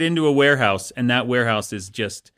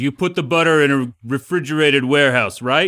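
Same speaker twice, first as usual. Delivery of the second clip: put-on Danish mafia boss voice; 2 semitones higher, 5 dB louder than usual. Acting out an imagined boss questioning his men, imitating a Danish mafia boss. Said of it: "the Danish accent".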